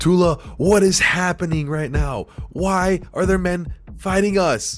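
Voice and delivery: screaming a little. As men run at them, a player's character calls to Tula, screaming out a little. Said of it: "just scream out a little bit".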